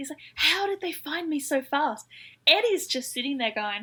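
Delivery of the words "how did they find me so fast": mock panicked, high, stretched-out voice. Retelling a scene where Mitchell is surrounded by police: imitating Mitchell panicking. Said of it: "Mitchell's panicking".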